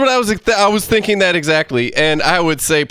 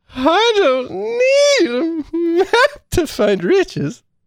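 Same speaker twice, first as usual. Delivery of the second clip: very high, drowsy cartoon elephant voice; 12 semitones higher than usual. Told to read from a voice list as the sleepy Jungle Book elephant. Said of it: "you have to do it as the sleepy elephant from Jungle Book".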